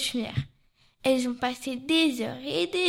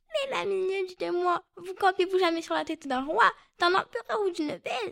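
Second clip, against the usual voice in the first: teasing, mocking fly voice, pitched up; 6 semitones higher than usual. Playing the fly as it addresses and mocks the ant, mocking fly voice. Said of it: "quand vous jouez la mouche".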